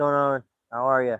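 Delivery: loud, shouted yell. Testing a new mic for the next video, greeting viewers while yelling. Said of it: "Sorry, I'm yelling".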